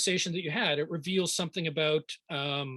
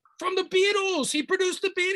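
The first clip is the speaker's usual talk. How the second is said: put-on fed-up yelling, pitched way up; 5 dB louder than usual. Retelling a phone call where the caller yelled at him; retelling a yell. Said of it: "He's yelling at me".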